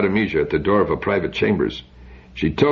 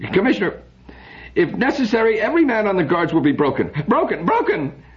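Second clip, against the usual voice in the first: very high voice on the edge of hysteria; 12 semitones higher than usual. Henrik answers the commissioner after a general alarm, near hysteria. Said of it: "He repeated the word in near hysteria".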